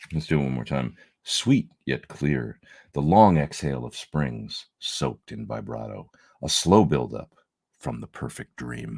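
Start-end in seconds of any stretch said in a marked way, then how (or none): 1.2-9.0 slow, grand, dramatic narrator voiceover. Reading a product's spiel aloud a second time, in a voiceover voice. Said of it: "Do you like my voiceover?".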